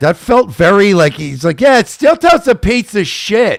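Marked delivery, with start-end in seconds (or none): 1.6-3.6 scornful, matter-of-fact, dismissive tone, pitched up. Repeating another speaker's line to show it sounded like Brennan: imitating Brennan. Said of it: "it came out very Brennan-esque".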